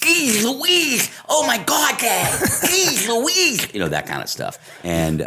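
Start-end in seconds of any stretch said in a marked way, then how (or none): 0.0-3.7 very high-pitched, slow, drawn-out goofy silly voice. A dad recalling how he joked around, doing a goofy voice. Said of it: "like goofy voices".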